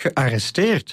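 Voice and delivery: genuinely astonished, taken aback. Maximus hears that a former gladiator was arrested, really surprised. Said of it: "Nu was Maximus echt verrast".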